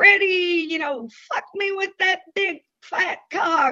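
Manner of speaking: mock, high-pitched hollering yell. Recounting how a drunk visitor behaved during a visit, imitating a woman yelling. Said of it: "So she's yelling".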